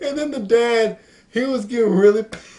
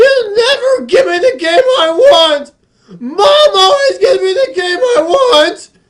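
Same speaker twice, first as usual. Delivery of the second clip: put-on wailing, bawling child voice, very high, loud; 10 semitones higher, 7 dB louder than usual. Speaker retells a kid arguing with his dad in a store, imitating a bawling kid. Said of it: "the kid started bawling".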